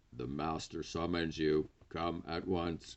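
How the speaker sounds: flat, toneless, monotone machine robot voice. Reading a story aloud, the robot speaks to Mason in a flat toneless robot voice. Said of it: "The robot speaks in a flat, toneless voice".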